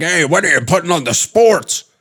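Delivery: mock complaining, high-pitched, held-in mild yell. Acting out a degenerate uncle in the corner: imitating a yelling uncle. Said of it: "yelling like".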